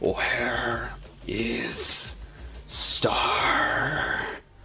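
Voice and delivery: miserable, wretched, creature-like hushed whisper. As game master, voice the chained creature crawling from the mist: wretched whisper. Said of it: "whisper in a wretched voice".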